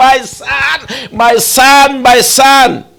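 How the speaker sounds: very slow, drawn-out calling shout. Telling a story of a boy chased by a crocodile, the speaker imitates a mother shouting. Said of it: "the mother was shouting".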